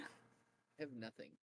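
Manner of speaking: soft, low, sad moping voice. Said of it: "I'm sad".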